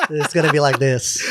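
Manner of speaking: plain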